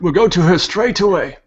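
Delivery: high, reassuring priest voice. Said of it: "Odaris, the priest, would say".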